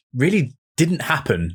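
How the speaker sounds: normal talking voice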